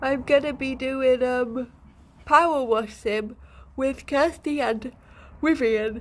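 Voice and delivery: talking through a yawn. A streamer chats with viewers, yawning while talking. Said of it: "Sorry, I'm yawning".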